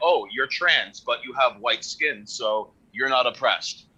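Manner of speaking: ordinary talk, nothing marked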